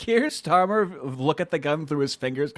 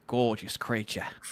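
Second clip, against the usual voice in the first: put-on Australian wildlife presenter voice, lower and quieter; 4 semitones lower, 6 dB quieter than usual. Admiring an engraved revolver: Steve Irwin voice. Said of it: "like Steve Irwin".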